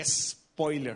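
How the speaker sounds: spoiler said Spanish-style, o syllable stressed. Showing how spoiler is written and said in Spanish, stress on the o. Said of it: "como se escribiría en español, spoiler, con acento en la O".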